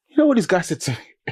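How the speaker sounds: ordinary delivery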